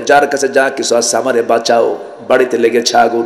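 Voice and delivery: ordinary talk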